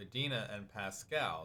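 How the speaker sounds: plain reading voice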